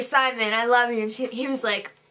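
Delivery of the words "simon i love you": plain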